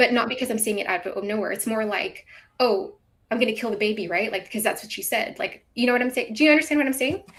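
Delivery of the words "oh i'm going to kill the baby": imitated mocking tone. Retelling replies to someone in a chat: imitating a mocking tone. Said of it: "I'm just mocking what he's saying".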